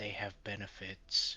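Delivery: soft, very quiet, hushed whisper. Voicing an invisible character creeping up behind someone: whisper in his ear. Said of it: "I'm just gonna whisper in his ear".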